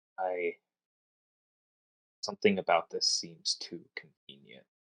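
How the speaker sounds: low, quiet, held-back murmur. Playing Oberon, holding back and speaking to Tauros, in a lowered voice. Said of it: "he's going to just lower his voice".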